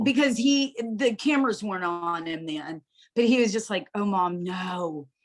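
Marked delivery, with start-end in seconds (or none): 3.9-5.1 on the verge of crying. Retelling the son's reaction to the news: imitating son almost crying. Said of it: "he was literally almost crying".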